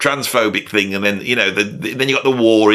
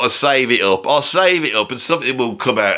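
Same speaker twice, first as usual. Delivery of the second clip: plain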